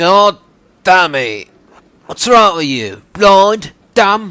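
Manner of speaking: snooty high voice. Voicing a game character who snaps at someone: snotty voice.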